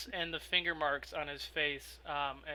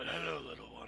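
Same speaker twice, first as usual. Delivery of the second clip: put-on creature voice; 3 dB quieter than usual. Voicing an owlbear greeting a player's character: Aika the owlbear voice. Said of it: "as he points to Aika, he goes".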